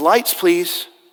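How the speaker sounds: ordinary delivery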